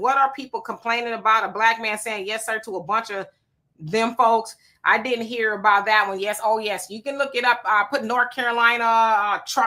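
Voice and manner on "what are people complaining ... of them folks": usual speaking voice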